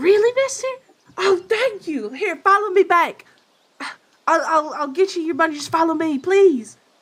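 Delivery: put-on very high, loud, thrilled, excited kid voice. Voicing the little guy after another player gives him the gold, very excited. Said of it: "very excited".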